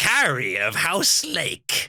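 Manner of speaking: generic evil supervillain monologue delivery. Acting out a full supervillain monologue, in a generic evil villain voice. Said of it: "I was just doing a generic evil voice".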